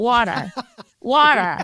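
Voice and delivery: "water" said in a put-on American accent. Asked to say a word with an American accent, trying it: American accent. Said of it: "Can you say water with an American accent".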